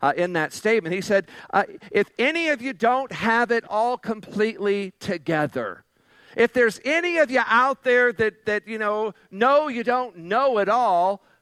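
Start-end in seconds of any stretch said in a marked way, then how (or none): 1.9-11.1 higher, lightly sarcastic reading. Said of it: "being a little bit sarcastic".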